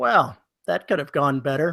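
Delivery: put-on synthetic text-to-speech computer voice. Joking about how an audiobook could end: put-on computer voice. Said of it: "just the computer voice going".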